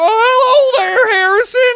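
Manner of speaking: very high, very loud clown voice, "oh" stretched. Acting out a clown who comes out from under a bed: Billy Bonkers clown voice. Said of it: "And he comes out, he's like".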